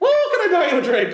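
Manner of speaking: very high put-on voice. Acting out a man offering to buy a drink, high-pitched Lucky Charms character voice. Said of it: "Like it literally sounded that high pitched".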